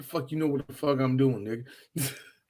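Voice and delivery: voice dropped right down, hushed and low. Voicing the Master answering Snake, voice dropped low. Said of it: "Drop his voice there".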